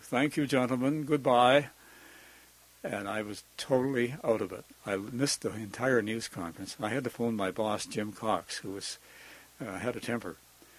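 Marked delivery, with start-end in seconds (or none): 0.0-1.7 put-on refined English accent, higher, louder. Retelling arriving late to a news conference, quoting a speaker in a cultured English accent. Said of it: "this cultured English voice saying".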